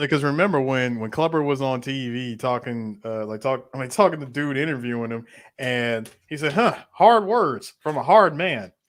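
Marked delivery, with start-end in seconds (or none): 6.5-8.6 put-on loud, booming old man voice.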